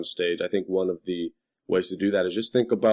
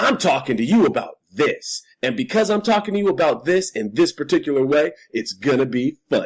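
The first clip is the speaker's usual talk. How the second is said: loud, high, put-on cocksure stand-up comedian patter; 7 semitones higher, 5 dB louder than usual. Speaker mocks the voice some people use to seem funny: mock faux-confident cadence. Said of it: "They have this voice of like".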